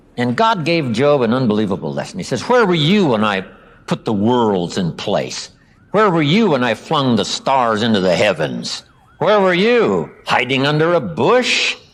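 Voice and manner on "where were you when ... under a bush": mocking, sarcastic, swooping, piled-on tone. Retelling God's reply to a complaining Job: imitating sarcastic questioning. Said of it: "A bit of sarcasm".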